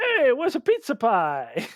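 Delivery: comical, sing-song cartoon voice. Discussing the Mario movie casting, a speaker does a comical Mario voice. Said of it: "He can do like a very comical".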